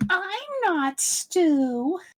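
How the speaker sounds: very high cartoon voice, swooping, one word drawn out. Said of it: "Every time I do Chuckie".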